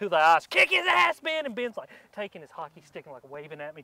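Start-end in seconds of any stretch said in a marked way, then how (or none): 0.5-1.4 very high, all-out scream at the top of the lungs. Retelling cheering on Ben at a hockey game, retelling a scream. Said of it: "screaming at the top of my lungs".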